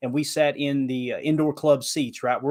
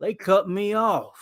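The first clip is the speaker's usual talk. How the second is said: high, put-on Southern accent; 6 semitones higher than usual. Retelling what a drunk guy behind them said, imitating a Southern accent. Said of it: "I'm using a Southern accent".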